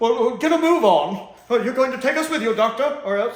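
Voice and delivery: very high, very loud, scared, panicky voice. Retelling a scene's scared brigade leader: imitating a panicky, scared leader. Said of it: "panicking and getting scared and kind of sounding like a scaredy cat".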